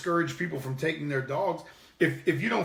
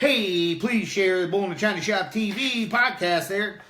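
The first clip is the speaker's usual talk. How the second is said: loud, cheesy, corny radio announcer promo voice; 4 semitones higher, 5 dB louder than usual. Podcast host urging listeners to share the show, in a corny radio guy voice. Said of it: "It sounds like a corny radio guy".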